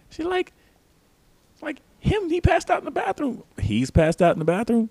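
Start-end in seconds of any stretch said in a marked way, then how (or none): 2.0-3.4 very high, squeaky, alarmed and urgent voice. Retelling what the bathroom attendant said when she called, imitating attendant's high-pitched voice. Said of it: "She got a real high-pitched ass voice".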